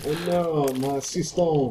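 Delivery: put-on French accent, slow. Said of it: "if you say it in a French accent".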